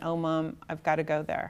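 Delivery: normal talking voice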